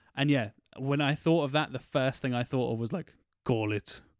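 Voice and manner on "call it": deep, menacing cartoon-villain Spanish accent. Imagining a casting choice for Bane, line in deep scary Spanish accent. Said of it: "really deep Spanish, scary accent".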